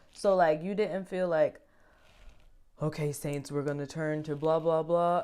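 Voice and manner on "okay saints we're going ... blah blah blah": very flat, droning monotone delivery. Contrasting a personable speaker with the way he did not talk: very monotone. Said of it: "like a very monotone".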